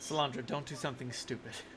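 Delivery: quiet, acted voice, soft under the breath.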